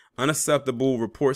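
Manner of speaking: usual speaking voice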